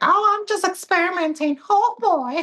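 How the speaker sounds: squeaky, high-pitched, slow voice. Speaker imagining a drag bit, Mickey Mouse voice. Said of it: "you could be like wearing Minnie's drag".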